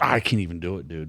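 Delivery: put-on growling voice. Retelling what he said in the truck: imitating a growling voice. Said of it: "growling, like, this voice came out of him".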